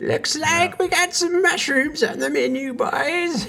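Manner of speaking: put-on old hunchback gnome voice. Trying out a voice for an old hunchback gnome character: Master Roshi voice. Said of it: "the Chetney Master Roshi".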